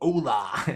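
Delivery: Spanish in Australian accent. Showing how the greeting sounds: Spanish with an Aussie accent. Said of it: "I say that like a real, real Aussie".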